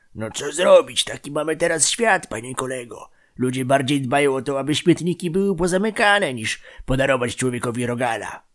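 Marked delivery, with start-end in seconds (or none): none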